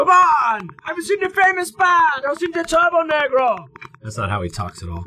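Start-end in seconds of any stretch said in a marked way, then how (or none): 0.0-3.7 put-on generic European accent, very high pitch. Quoting a man in a voice the speaker later apologizes for: general European accent. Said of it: "That was just a general European accent".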